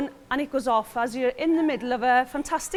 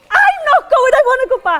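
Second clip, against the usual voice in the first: put-on panicked child scream, much higher and louder; 11 semitones higher, 9 dB louder than usual. Retelling a walk with the children, the speaker imitates Harrison screaming. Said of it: "he just screams".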